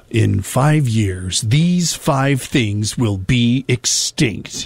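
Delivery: ominous, sinister tone, very deep voice. Radio host quotes a guy from a video he came across, in a very deep voice. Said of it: "in a very deep voice that says".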